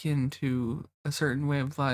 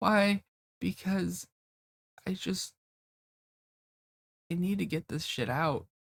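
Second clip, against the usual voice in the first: tearful, crying voice, higher pitch; 4 semitones higher than usual. Explaining on a Twitch stream why they are talking instead of packing: crying while talking. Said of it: "I'm sitting here crying on Twitch".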